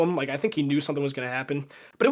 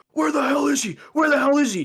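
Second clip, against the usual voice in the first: high, shrill, screamed voice; 12 semitones higher, 5 dB louder than usual. Telling a story, acting out a fifty-year-old dude screaming in the theater. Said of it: "he's like in the theater screaming".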